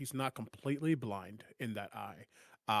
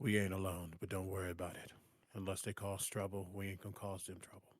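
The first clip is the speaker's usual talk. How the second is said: quiet muttering under breath, quieter; 5 dB quieter than usual. Voicing a character who looks up at a companion across from him: mumbling under his breath. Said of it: "he'll just mumble under his breath".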